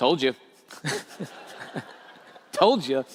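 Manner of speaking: put-on low, reproachful scolding motherly voice. Telling how their mom found them burned and screaming; imitating mom scolding. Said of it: "she's like".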